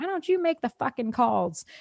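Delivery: mock furious, angry shouting outburst. Retelling a line her mother said while fighting with her dad: imitating mom shouting in a fight. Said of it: "her and my dad were fighting".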